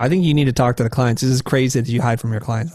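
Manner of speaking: normal talking voice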